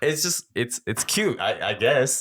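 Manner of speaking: high, laugh-choked voice, holding in a laugh.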